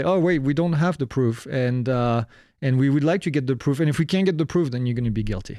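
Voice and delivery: ordinary talk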